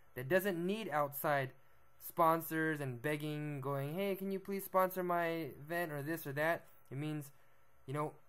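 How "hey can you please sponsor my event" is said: ordinary talk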